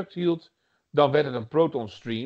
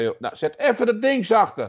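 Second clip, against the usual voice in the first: high, loud calling out. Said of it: "mijn moeder riep van".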